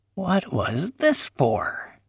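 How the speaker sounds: aghast, horrified, high and drawn out. Weasel pulling Paul's handsaw out of the pack, horrified. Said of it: "He sounded horrified".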